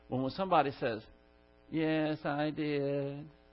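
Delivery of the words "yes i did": flat, toneless monotone with level, unvaried pitch. Showing how someone answers when something's the matter: flat monotone. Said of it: "it's just monotone like this".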